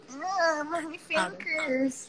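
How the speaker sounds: high, slow, drawn-out put-on whine. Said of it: "He's like / Otto's the whiny one".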